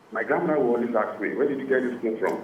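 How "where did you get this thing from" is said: plain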